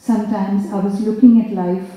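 plain reading voice

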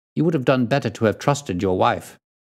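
ordinary delivery, nothing marked

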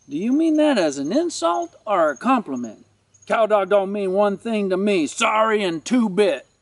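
ordinary delivery

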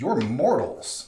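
stunned, disbelieving, incredulous voice. Voicing a helmeted figure who pauses, then speaks: speaking in disbelief. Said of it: "almost in disbelief".

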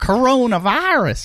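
very high-pitched, loud comic voice. Imitating how a daughter says one word, like Holly Hunter. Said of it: "I'm telling you".

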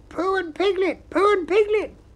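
very high, loud, squeaky excited voice. Reading a story about Pooh and Piglet aloud, voicing an excited squeak. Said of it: "something very excited next to the jaguar heard him and squeaked".

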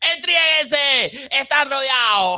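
mock police shout, high, loud and slow.

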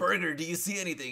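put-on, very high, urgent yell. Retelling yelling up to a gunner during a scare: imitating himself yelling. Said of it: "I'm yelling at my boy".

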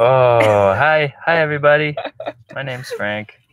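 put-on dog voice with drawn-out oh. Introducing a new pet dog to the audience, voicing Frank the dog. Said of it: "He talks".

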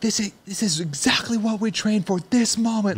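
shrill, very high-pitched screaming. Retelling what a coach yelled at his athlete: imitating Justin Kotler screaming. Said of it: "just screaming".

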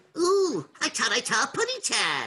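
high cartoon bird voice. Voice actor asked to show a cartoon voice he does, Tweety voice. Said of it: "And you do Tweety".

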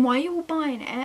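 ordinary talk

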